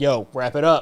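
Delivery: put-on agitated tone. Retelling a scene where a man is shown a picture: imitating someone agitated. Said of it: "he gets agitated".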